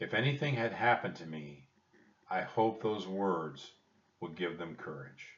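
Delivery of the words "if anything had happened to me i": ordinary delivery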